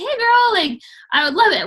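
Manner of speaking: high, loud, squeaky, excited little squealing voice. Describing how Keisha voice-memos people about a coach session: imitating Keisha's squeaky voice. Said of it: "with her like squeaky, squealy little voice".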